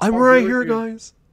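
put-on yelling, very high-pitched. Voicing someone who is right upstairs: pretend yelling down from upstairs. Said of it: "He's just yelling down to us".

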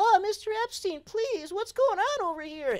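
very high put-on little-kid voice. Retelling pretending to be a little kid: imitating a little kid. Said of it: "pretending to be a, a little kid".

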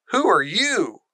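high, insistent, demanding tone. Mary, wandering the gardens, questions an old man who is digging, demanding. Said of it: "demanded Mary".

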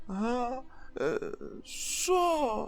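very high, soft, drowsy, sleepy mumble. Narrator reads the daughter's reply on being woken by her father, sleepy mumble. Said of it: "спросоня пробурмотіла Діана".

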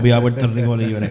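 plain

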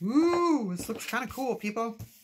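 high, loud squeal.

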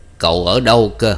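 put-on thick, broad Northern Vietnamese accent. Narrator reading an old man's question to a young man, in a thick northern vietnamese accent. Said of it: "hỏi giọng đặc miền Bắc".

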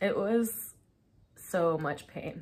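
voice catching with emotion. Recalling being sick with COVID, getting choked up. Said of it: "I don't know why I'm getting choked up thinking about this".

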